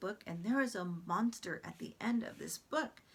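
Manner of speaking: plain reading voice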